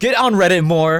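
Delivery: loud yelling, shouting. Reacting to a post read aloud, yelling. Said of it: "sorry for yelling".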